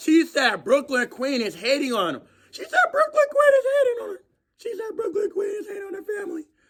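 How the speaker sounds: hoarse, very high, nearly gone voice. Commenting on what a fifteen-year-old said, with a hoarse, lost voice. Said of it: "my voice is really lost right now".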